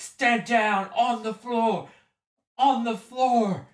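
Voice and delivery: very high, very loud, slow bellowing scream, megaphone-like. Voicing a guard ordering players down: screaming through a megaphone. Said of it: "a voice just screaming to a megaphone".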